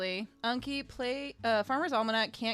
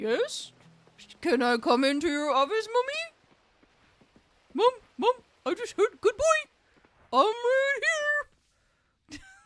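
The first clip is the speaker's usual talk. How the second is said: very high, loud, squeaky sing-song pet voice; 11 semitones higher, 5 dB louder than usual. Imagining the pet in the other room overhearing: voicing Stash the pet. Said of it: "he would be like".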